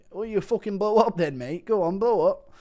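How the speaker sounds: high, taunting, bullying tone. Impression of Aspinall bullying Bilal, taunting Aspinall impression. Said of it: "Impression of bully at Aspinall bullying Bilal".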